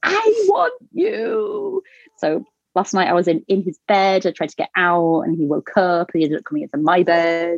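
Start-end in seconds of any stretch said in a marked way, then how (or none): 0.0-1.8 shrill, rough top-of-the-lungs scream, "you" drawn out. Mother describes her three-year-old calling for her, imitating Joshy screaming. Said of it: "he'll scream that at the top of his lungs".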